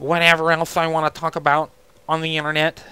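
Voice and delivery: put-on nerdy voice. Talking to viewers about enjoying making videos: put-on nerd voice. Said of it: "little nerd voice there".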